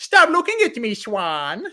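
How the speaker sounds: very high, loud, shrill, swoopy, silly jokey voice. Showing the Adam Sandler voice done while growing up: high jokey Adam Sandler voice. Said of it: "the high Adam Sandler stuff".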